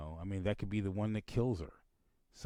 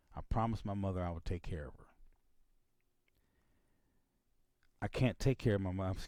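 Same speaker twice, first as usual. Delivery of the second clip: trying not to get emotional, holding back emotion. Explaining not having help to care for mother, trying not to get emotional. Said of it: "I'm trying not to get emotional here".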